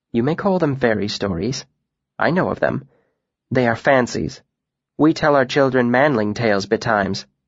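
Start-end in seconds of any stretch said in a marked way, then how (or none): none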